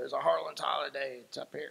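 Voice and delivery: rough, gravel-edged, rasping voice. Recalling asking George Sebo what the horse was, imitating George's gravelly voice. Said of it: "he had this gravelly voice".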